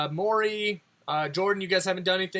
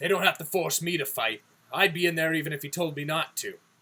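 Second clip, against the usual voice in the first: put-on orc character voice; 3 semitones lower than usual. Voicing an orc fighter who proudly says no one forces him: voicing an orc. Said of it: "being part Orcish".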